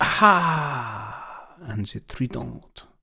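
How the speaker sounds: very slow, put-on French accent. Announcing a ship called the trident, in a french accent. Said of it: "why did I put a French accent on?".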